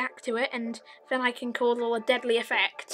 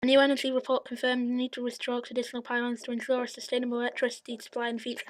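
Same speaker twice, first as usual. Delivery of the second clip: read aloud very fast, rushed and rattled off; 4 dB quieter than usual. Reading a report aloud, reading very fast. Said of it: "I just read that all very fast".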